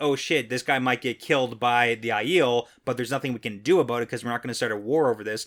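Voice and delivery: ordinary talk, nothing marked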